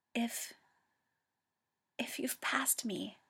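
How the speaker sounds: trembling, husky, shaky, hoarse whisper. Narrator reads Toya's words to Hikaru, in a shaky, hoarse whisper. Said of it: "his voice is a shaky, hoarse whisper".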